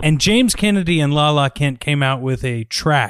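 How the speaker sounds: plain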